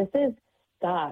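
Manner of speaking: ordinary talk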